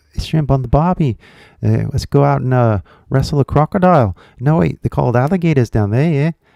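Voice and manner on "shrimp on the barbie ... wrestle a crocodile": put-on Australian accent. Jokingly trying an Australian accent after saying he won't try. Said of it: "I'm not gonna even try".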